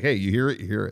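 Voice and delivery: hushed, quiet stage half-whisper. Retelling what was said quietly at first, imitating a half-whisper. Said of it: "I whispered quiet".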